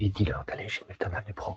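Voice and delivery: softly whispering.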